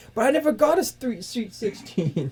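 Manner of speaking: mock whiny character voice.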